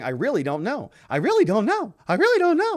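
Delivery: small, high, tiny little voice. Speaker quoting a man's repeated words, little voice. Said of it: "in his little voice".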